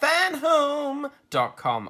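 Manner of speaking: voice breaking, very high-pitched and loud. Reading an ad script aloud and retrying a word, the speaker speaks with voice cracking. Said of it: "my voice went then".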